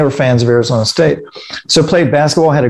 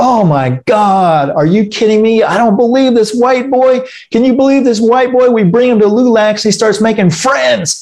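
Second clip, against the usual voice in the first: mock full-on screaming rant, pitched up; 8 semitones higher than usual. Retelling how the kids in the car reacted, imitating someone screaming. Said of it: "start screaming like".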